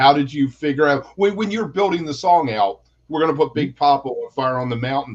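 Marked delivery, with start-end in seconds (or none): none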